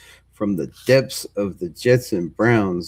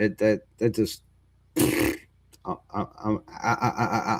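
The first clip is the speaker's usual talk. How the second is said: stuttering, quieter, slower; 4 dB quieter than usual. Reacting to the Chicago Bears letting a player walk: stuttering. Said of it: "I'm stuttering because I don't know what to".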